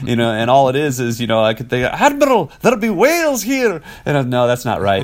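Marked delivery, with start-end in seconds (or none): 1.9-3.8 put-on Scottish accent at a much higher pitch. Describing sources for learning a Scottish accent, Scotty Scottish accent. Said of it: "Scotty from Star Trek, and that's actually a great Scottish accent".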